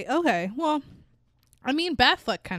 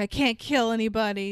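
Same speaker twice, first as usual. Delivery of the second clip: ordinary talk, nothing marked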